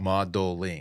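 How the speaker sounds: mocking, overemphasized, syllable-split "modeling". Teasing another speaker by repeating their word, mocking overemphasized 'modeling'. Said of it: "I was overemphasizing".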